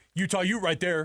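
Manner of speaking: play-acted, high-pitched, yelled-out call. Retelling the broadcast audio's call of the catch: imitating Sly yelling. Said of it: "Number one thing he's gotta yell out".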